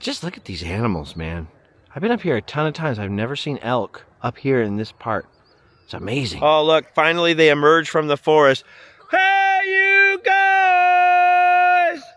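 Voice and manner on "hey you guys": shrill, very high scream, "guys" stretched out. Calling out loudly to people near the elk: screaming. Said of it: "when I started screaming sloth things".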